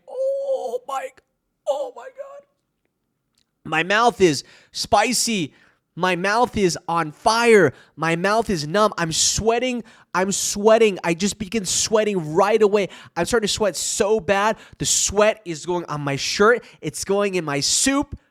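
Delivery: plain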